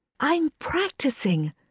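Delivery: high, hushed half-whisper under the breath. A woman in a darkened corridor half-whispers up to Jeremy: half-whispered. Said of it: "she whispered".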